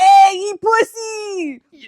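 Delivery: put-on strong, loud, high Mexican accent, "pussy" stretched out. Imagining what people would say to them, acting out a stranger's greeting in a Mexican-sounding accent. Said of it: "you sounded so Mexican saying that".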